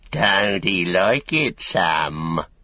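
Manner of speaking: very slow, drawn-out, scornful sneering tone. Narrator reads a hobbit at the mill-yard wall taunting another hobbit: sneering. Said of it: "he sneered".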